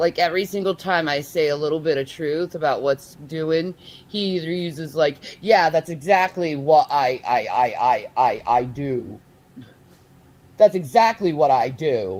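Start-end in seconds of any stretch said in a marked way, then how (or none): 5.4-12.2 loud, play-acted, heavily sarcastic, stammering delivery. Imitating how the other person dodges criticism: imitating someone's sarcastic admission. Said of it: "saying it in a sarcastic way".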